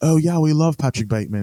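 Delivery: put-on high British accent. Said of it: "that's why I'm doing it in a British accent".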